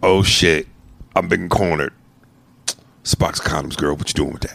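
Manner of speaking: abrupt switch to cornered seriousness, low and fast. Describing a funny moment, the speaker imitates a man suddenly turning serious. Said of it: "the seriousness in which he goes".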